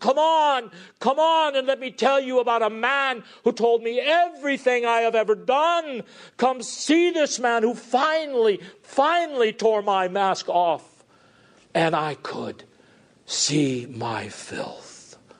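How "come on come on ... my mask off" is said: high, full-volume scream at the top of lungs. Retelling how the Samaritan woman called through the village: imitating a woman screaming loudly. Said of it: "she just screamed at the top of their lungs".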